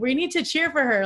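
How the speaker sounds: high, loud yelling.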